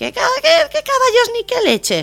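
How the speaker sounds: high, wide-pitched, exasperated, indignant character voice.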